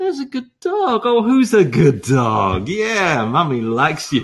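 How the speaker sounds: sweet, fond, doting tone. Demonstrating dog training by praising the dog, sweet praising voice. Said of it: "praising dog in sweet voice".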